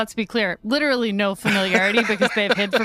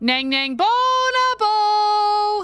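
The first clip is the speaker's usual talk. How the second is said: very high, cheery, friendly calling-out shout; 12 semitones higher than usual. A character calls up a hallway to kobolds, friendly shouting. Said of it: "He's shouting in a very friendly way".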